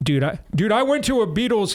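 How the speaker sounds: failed English accent attempt. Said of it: "I can't do his, his English accent".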